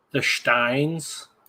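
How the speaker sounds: little put-on German accent, slight and soft. Naming a vampire novel series by title, with a little German accent. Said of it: "I like the little German accent thrown on there".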